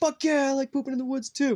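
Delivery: gung-ho, enthusiastic cheering. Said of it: "everybody that's like".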